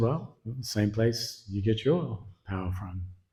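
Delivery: soft, slow, calm and unbothered. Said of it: "Prahlad very calmly said".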